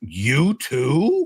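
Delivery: startled, disbelieving, surprised, "too" drawn out. Retelling a phone call the day both were laid off: imitating Ray sounding surprised. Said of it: "the only time I ever heard Ray surprised".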